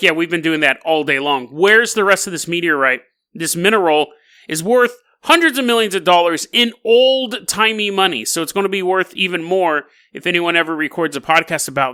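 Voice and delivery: ordinary talk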